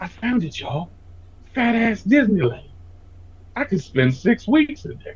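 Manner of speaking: acted breathless voice, breathy, soft, drawn-out, funny. Imitating a TikTok creator who was always out of breath: imitating a funny out-of-breath voice. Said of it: "He goes".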